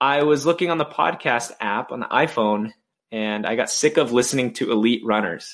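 ordinary talk

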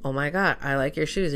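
normal talking voice

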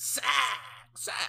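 screamed loudly, same word twice. Interrupting the conversation with a sack call: Mike Keith impression. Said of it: "I can't do it".

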